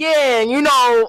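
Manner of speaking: put-on thick, loud, heavy Brooklyn accent. Speaker recounting Spider-Man hugging them, doing his thick Brooklyn accent. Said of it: "puts on a Brooklyn accent too, like a thick, heavy Brooklyn accent".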